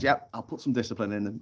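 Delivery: plain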